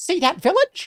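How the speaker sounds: high, swooping, squeaky, bouncy puppet voice. Voicing the creature that replies to Jan: Elmo voice. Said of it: "It was supposed to be the Elmo voice".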